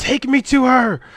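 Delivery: shrill, very high, loud yelling. Voicing an unseen creature holding a knife, yelling in character. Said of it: "kinda yell at you this time".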